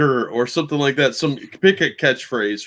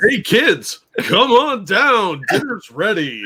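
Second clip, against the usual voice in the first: pitched-up, announcer-style game show host voice; 8 semitones higher than usual. Joking about how she might always speak English, in a game show host voice. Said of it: "it's always in a game show host tone".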